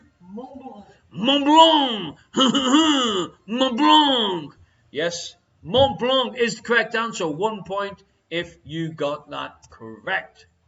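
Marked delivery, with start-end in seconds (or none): 0.2-4.6 put-on French accent, loud, slow and drawn out. The quiz host asks a contestant to answer in their finest French accent. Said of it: "in your finest French accent".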